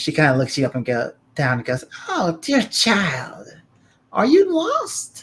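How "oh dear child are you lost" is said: put-on very high, slow, swooping old hag voice. Voicing an old hag who greets a visitor at her door: old hag voice. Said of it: "old hag".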